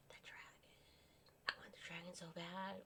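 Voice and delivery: very quiet hushed whisper, yell held in. Talking about products they want, whispering to keep from yelling. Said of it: "I'm whispering because I'd be yelling right now".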